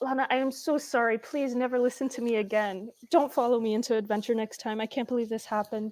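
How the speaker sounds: profusely apologetic, repeated. A player's character reunites with lana and apologizes to her, profusely apologetic. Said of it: "immediately hug her and profusely apologize".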